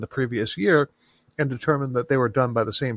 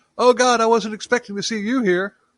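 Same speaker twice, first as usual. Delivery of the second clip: mock very high, shrill shout; 9 semitones higher, 4 dB louder than usual. Retelling how a startled priest reacted: imitating a shout. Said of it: "Crean turned around and shouted".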